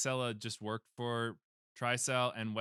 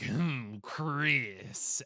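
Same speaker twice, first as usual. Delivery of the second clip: evil villain voice, sounding properly evil. Describing how the game made the villain sound more evil, doing Albert Wesker evil voice. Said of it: "so he does talk like that".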